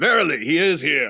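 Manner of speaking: mock, slow, grand archaic godly voice. Imagining Thor answering Captain America about the Punisher, in a Thor voice. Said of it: "Do you have to talk like that".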